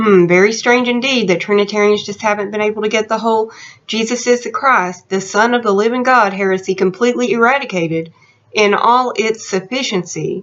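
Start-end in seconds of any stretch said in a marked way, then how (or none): none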